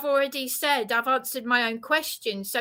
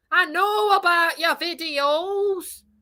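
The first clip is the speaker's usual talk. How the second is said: mocking Northern English accent, high and slow; 5 semitones higher, 4 dB louder than usual. Addressing John about his videos, mocking John's Northern accent. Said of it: "now I am mocking your accent".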